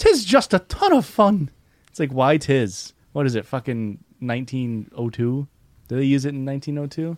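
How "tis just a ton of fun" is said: fake Irish accent, leprechaun-style put-on voice. Reading out a game review, put-on irish leprechaun accent. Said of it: "Why'd you use a leprechaun voice?".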